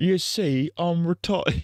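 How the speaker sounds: very high-pitched put-on British accent. Joking about himself, in a put-on British voice. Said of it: "I love doing that British voice".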